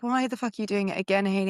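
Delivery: normal talking voice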